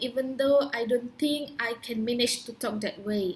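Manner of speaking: ordinary talk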